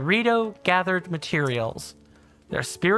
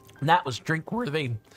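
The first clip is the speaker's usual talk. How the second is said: voice cracking and breaking; 2 semitones lower than usual. Finishing a long read-aloud story, the reader says its closing line, voice cracking. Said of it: "my voice just cracked there".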